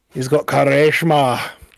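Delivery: put-on Irish accent that sounds Scottish. Describing a man people find full of character, speaker imitates him in an attempted Irish accent. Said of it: "You did more Scottish".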